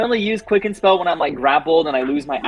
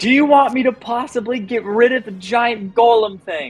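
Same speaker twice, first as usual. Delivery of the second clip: shrill, very high-pitched yelling; 10 semitones higher than usual. Calling out in character to the party mid-fight: yelling out in character. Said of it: "I'm gonna yell out again".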